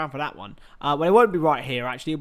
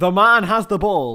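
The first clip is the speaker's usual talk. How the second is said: loud, terrible, exaggerated American accent; 6 dB louder than usual. Recalling own commentary on a Super Bowl stream, in an awful American accent. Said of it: "my awful Americanizations of everything".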